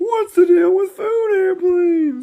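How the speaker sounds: put-on very high, slow, loud, squealing baby voice. Offering the others a joke impression: Jerry Seinfeld as a baby impression. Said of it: "do you wanna hear my impression of Jerry Seinfeld as a baby".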